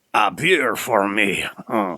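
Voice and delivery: put-on French accent, imp voice. Voicing the imp offered a beer: French imp voice. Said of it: "Oh, you're French".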